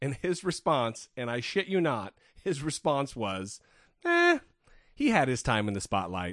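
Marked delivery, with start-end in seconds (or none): none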